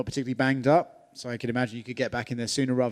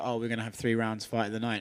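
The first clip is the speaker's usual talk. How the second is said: usual speaking voice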